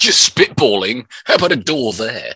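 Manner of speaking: very loud, high-pitched upmarket voice. Teasing the other speaker over a phrase, mocking them in an upmarket Notting Hill architect voice. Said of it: "You sound like some upmarket wannabe Notting Hill architect".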